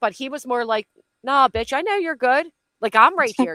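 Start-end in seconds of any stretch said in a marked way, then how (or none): 1.2-3.5 put-on cute sweet tone, higher and louder. Retelling how someone reassured a jumpy person: imitating a cute, sweet reassurance. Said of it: "But the way he said it was, like, it was cute".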